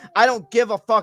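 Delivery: ordinary talk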